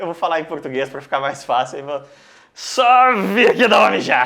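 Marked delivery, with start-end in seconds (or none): 2.5-4.3 put-on loud, sloshed, boozy-sounding drunken voice. Retelling what a drunk guy said after a police officer yelled, imitating a drunk voice. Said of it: "E aí a voz bêbada do irmão".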